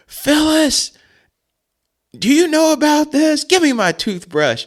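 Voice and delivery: yelling call, pitched way up high. Retelling how the dad yelled for the mom: imitating dad yelling. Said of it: "he yells for my mom".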